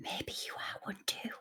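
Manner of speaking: very quiet, close whispered delivery. As Maeve, leaning closer to him after his muttered remark: Maeve whispering. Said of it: "lean down a bit closer and whisper".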